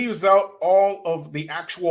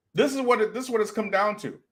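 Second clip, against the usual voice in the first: ordinary talk, nothing marked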